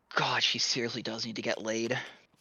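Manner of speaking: quiet grumbled mutter, half to oneself. Voicing a character who is annoyed at another: muttering under her breath. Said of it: "Laria muttering under her breath".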